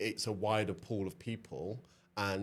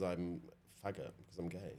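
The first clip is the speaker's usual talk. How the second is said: plain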